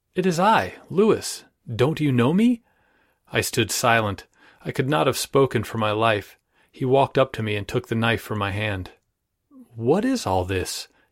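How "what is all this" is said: mild, gentle, inquiring tone. A man takes the knife from the narrator's hand and asks, in a gentle voice. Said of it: "He inquired in a gentle voice".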